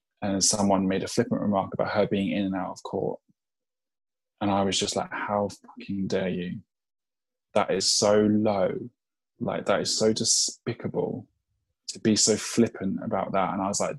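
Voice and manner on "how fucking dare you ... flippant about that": slow, appalled, indignant, disgusted outburst. Retelling own reply to a flippant remark online: retelling own disgusted outburst. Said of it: "I was so disgusted by that".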